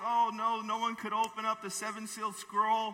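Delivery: put-on tearful, sobbing, weeping delivery. Retelling the Bible scene of John at the sealed scroll: imitating John crying. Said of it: "and John was crying".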